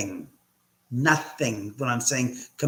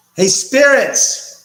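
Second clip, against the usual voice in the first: raised call, very loud and high-pitched; 10 semitones higher, 12 dB louder than usual. Calling down the stairwell to spirits in the home, in a raised voice. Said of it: "So I'm raising my voice".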